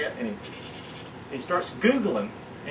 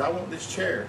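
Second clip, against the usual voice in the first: usual speaking voice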